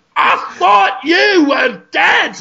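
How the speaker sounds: put-on slow, high, stretched-out Scottish accent. Acting out a made-up film scene, Brendan Fraser Scottish accent. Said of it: "Because he's Scottish in this one".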